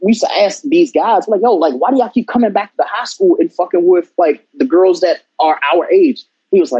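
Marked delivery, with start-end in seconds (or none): none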